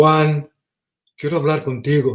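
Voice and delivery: stern, angry, cross tone. Recalling his mother calling his name, the speaker is imitating mom getting mad. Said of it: "You know how our mo- mom's voices change".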